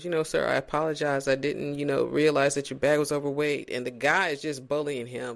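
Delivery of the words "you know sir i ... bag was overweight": ordinary talk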